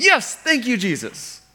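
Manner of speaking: put-on, loud, very high, exultant joyful shout. Retelling a healed man coming back to praise God, retelling loud praise of God. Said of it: "Praising God in a loud voice".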